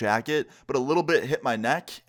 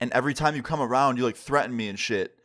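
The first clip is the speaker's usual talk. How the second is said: plain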